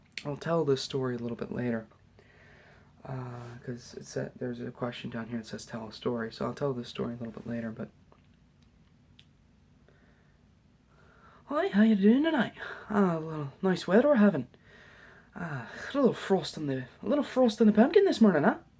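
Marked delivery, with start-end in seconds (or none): 7.7-18.6 imperfect Irish or Scottish accent, loud and high. Greeting the audience tonight, the speaker talks in an imperfect Irish accent. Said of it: "my Irish accent is not perfect, or Scottish".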